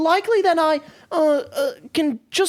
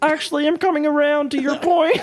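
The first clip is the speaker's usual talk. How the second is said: put-on frog puppet voice. Doing impressions with others, switching to Kermit: Kermit the Frog voice. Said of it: "I'm doing Kermit".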